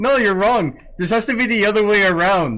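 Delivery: very loud, high voice. Speaker disagrees during a discussion, in a raised, loud voice. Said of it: "I gotta lower my voice".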